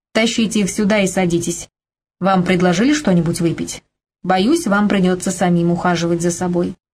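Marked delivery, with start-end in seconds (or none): none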